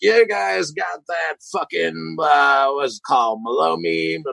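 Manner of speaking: mock-drunk slurred speech. A bartender retelling a drunk customer ordering at the bar, imitating drunk slurring. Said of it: "He's like slurring his words".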